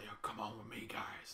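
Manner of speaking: hushed, soft, quiet, slow unhurried voice. Describing how Sir Rick calls the group along: Sir Rick's soft gritty voice. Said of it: "Sir Rick's just like".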